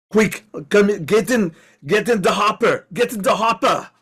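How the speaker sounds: put-on loud, shouted German accent laid on thick. Voicing Carl as he pulls up and rescues the group: Carl's thick German accent. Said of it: "in a thick German accent says".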